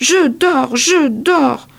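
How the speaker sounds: very slow, full-throated, very loud, high shout. Bouillotte, startled by a knock, pricks her paw and cries out; shouting very loudly. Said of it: "Elle crie tout fort".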